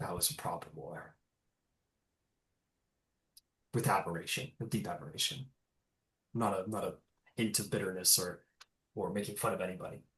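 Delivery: hushed, very quiet, low voice. Game master voicing Siana, speaking privately to Rowan; very quiet. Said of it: "she'll very quietly say to you".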